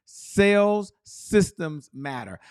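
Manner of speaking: slow, deliberate, word by word. Speaker answers a question about the big takeaway, repeating it a little slower. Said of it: "I'm going to say that again a little slower".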